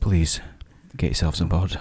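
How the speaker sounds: very low, downcast, glum and depressed murmur. Doing a scripted bit with a co-presenter, sounding depressed. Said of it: "Why did you sound so depressed about that?".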